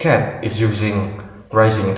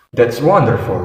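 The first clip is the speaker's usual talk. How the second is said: falling tone at the end of wonderful; 4 dB louder than usual. Teaching intonation with examples for exclamations, falling intonation on wonderful. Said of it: "falling intonation used for statements or maybe used for exclamation or comments".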